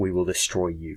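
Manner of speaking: really low-pitched villain voice. Describing a cheesy villain line from an episode, in a really low-pitched voice. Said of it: "in this really low-pitched voice".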